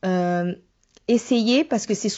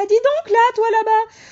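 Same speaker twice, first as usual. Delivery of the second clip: small voice, much higher pitched, louder; 14 semitones higher, 6 dB louder than usual. Showing how to get pupils' attention without shouting, small high-pitched voice. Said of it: "avec une petite voix aiguë".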